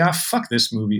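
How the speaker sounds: cynical, dismissive scoff. Imitating a viewer who rolls their eyes at the movie: imitating a dismissive viewer.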